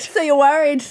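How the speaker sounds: acted strong Scottish accent. Imitating the moment where Robert Pattinson slips out of his regular accent, Robert Pattinson's weird Scottish accent. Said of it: "But full Scottish".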